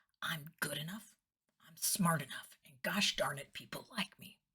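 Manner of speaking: quiet, whispered words. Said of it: "look at yourself in the mirror and say".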